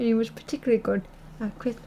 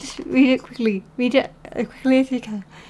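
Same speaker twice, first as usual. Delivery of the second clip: ordinary delivery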